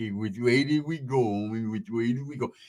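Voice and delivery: low, dopey, dim-witted, slow-sounding voice. Imitating a slow-witted cousin asking for directions: imitating a slow, dopey cousin. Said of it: "he's hella slow".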